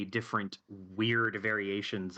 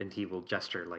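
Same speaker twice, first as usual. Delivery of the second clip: normal talking voice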